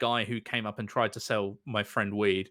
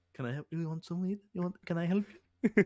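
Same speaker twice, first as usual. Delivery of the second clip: weird, peculiar, pitched-up stranger's voice; 8 semitones higher than usual. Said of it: "he had, like, the strangest voice".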